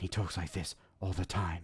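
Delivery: low, quiet whisper. Critiquing a film's lead voice, demonstrating how he talks, breathy Robert Pattinson whisper. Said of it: "it's a breathy whisper".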